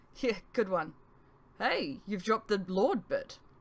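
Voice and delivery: plain reading voice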